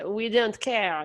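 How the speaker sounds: fake French accent. Describing teenage french friends smoking, the speaker quotes them in a fake french accent. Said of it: "This is a racist impression of a French person".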